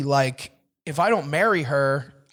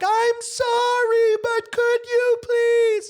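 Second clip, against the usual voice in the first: meek, very high, very slow submissive scream. Showing how to ask people for something: loud, screaming but submissive. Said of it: "in a really loud, screaming, but also submissive kind of way".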